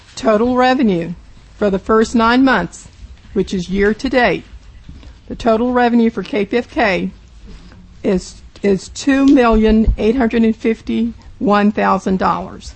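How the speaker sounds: slowed-down delivery.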